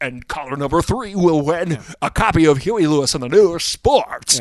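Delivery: loud, corny, cheesy radio announcer voice. Imagining him announcing a caller's prize, in a cheesy radio announcer voice. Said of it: "him doing a cheesy radio voice going".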